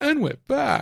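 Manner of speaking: deliberately irritating, very high-pitched voice. A host announces the return from a break: annoying voice. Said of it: "I always try and use my annoying voice when I say that".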